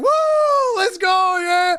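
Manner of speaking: put-on very slow, high, loud, drawn-out whooping kid cheer. Retelling a ride where the son was having a blast: imitating an excited kid cheering. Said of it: "my son's just having a blast".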